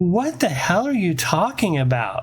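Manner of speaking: doing a woman's voice. Retelling a voice heard over the police radio, imitating a woman's voice. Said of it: "In this female's voice".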